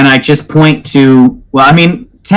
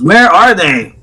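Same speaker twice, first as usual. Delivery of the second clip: calling out loudly at a high pitch; 5 semitones higher than usual. Searching a dungeon for missing companions in character: yelling at the top of lungs. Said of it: "I am yelling at the top of my lungs".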